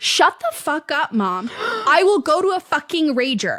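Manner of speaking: top-of-lungs scream. Retelling what a girl screamed at her mom: retelling a top-of-lungs scream. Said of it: "she screams at the top of her lungs".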